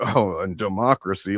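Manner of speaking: put-on sarcastic, scornful, mocking, dismissive sneer. Commentator acting out a man reading a platform aloud: imitating a mocking eye-roll. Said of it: "rolling his eyes at the idea".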